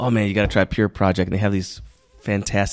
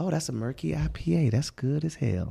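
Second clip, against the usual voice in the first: radio ad announcer voice, much quieter; 7 semitones higher, 9 dB quieter than usual. Retelling tasting a beer, in a radio commercial voice. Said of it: "Do you do radio commercials?".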